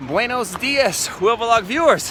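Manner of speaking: winded, panting voice. Greeting vlog viewers during a multi-day trek, out of breath. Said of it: "I'm very out of breath right now".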